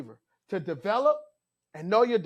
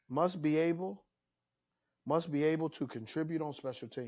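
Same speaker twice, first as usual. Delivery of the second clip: dead-level monotone, low and flat; 4 semitones lower, 9 dB quieter than usual. Listing the last must for a fourth wide receiver: flat coach monotone. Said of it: "I'm going to say this in monotone voice, like a coach".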